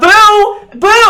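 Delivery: shrill, panicked, very high, loud frantic scream. Voicing a wife searching the house for her child: screaming for a child. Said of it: "And she starts running... screaming for this kid".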